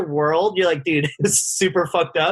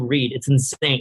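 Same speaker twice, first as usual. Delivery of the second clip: ordinary delivery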